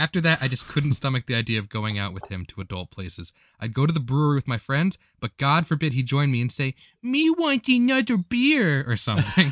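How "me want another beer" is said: put-on awful baby talk with a high, sing-song toddler lilt. Speaker imitates the man they went out with ordering at a brewery: awful toddler lilt. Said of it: "this god awful toddler lilt accent".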